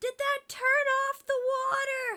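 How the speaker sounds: whispered shout, way up in pitch, loud. Calling back down to the others after pressing the button, whisper-yelling. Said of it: "I'm gonna whisper yell back down".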